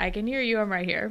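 plain

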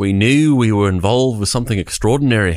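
poor put-on Australian, drifting British. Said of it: "It came out as British for some reason".

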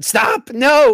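high, loud, mock-protesting shout.

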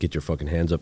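ordinary talk

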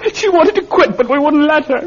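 wailing, very high-pitched, bawling sobs. Confessing after their mother dies in her sleep, bawling. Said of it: "Stop your bawling".

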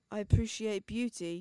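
put-on British accent. Retelling a TV character's line: put-on British accent. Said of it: "what a British accent".

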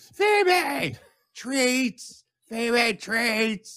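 yelling at the top of lungs. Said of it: "yelling the name at the top of your lungs".

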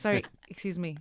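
put-on businesslike woman's voice. Imitating a friend who talks to her kids on the phone: businesslike phone manner. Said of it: "it's like she's a businesswoman and they're her colleagues".

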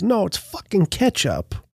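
animated, punchy delivery with wide swooping pitch. Retelling a movie scene where a man coughs blood: Joe Pesci impression. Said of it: "that's my Pesci".

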